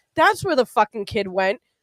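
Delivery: put-on angry, all worked up, under the breath. Retelling what a man said on learning where the kid was, imitating him angrily. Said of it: "He's like all angry".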